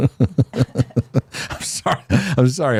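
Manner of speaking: very slow, apologetic words through laughter. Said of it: "I'm laughing".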